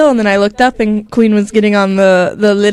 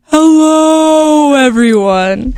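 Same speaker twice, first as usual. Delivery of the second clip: "hello" stretched out high, like whale talk; 6 semitones higher than usual. Greeting listeners at the podcast start: Dory speaking whale voice. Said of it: "my attempt at Dory doing the whales talk".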